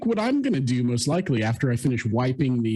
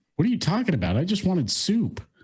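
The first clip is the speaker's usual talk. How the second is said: put-on innocent tone, higher pitch; 7 semitones higher than usual. Answering the angry father in character: innocent in-character reply. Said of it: "I just look him dead in the eyes and just go".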